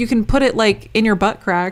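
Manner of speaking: ordinary talk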